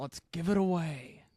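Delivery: slow, deliberate movie-star delivery. Announcing a giveaway in a Garrett Hedlund impression. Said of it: "That's my Garrett Hedlund".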